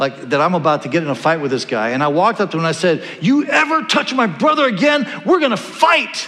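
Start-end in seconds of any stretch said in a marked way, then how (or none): 3.2-6.3 mock high, voice-breaking, terrified yell. Retelling confronting a bigger boy who hurt a brother: imitating own cracked, terrified yell. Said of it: "I just yelled at him, and my voice came out all cracked because I was terrified".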